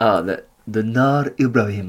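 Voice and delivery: imitated Arabic accent. Asked by another speaker to do his Arabic again, Arabic accent. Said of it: "can you do that your Arabic again?".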